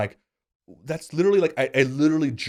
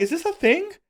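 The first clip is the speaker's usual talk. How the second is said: put-on very high, shocked child voice. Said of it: "And I'm like".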